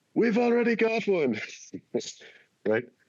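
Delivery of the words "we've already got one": mock very high shout called from afar. Retelling a Monty Python and the Holy Grail scene, the French guy's reply, imitating someone shouting. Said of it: "the French guy shouts from the castle".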